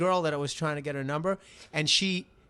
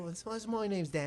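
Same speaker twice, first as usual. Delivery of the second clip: mock Irish accent, higher and quieter; 4 semitones higher, 8 dB quieter than usual. Imitating how the guests greeted him when they walked in: imitating the guests' accent. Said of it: "if you speak with that British accent".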